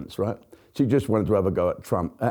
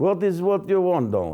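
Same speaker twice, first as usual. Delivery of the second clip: bad put-on Russian accent, higher; 8 semitones higher than usual. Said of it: "That was the worst Russian accent".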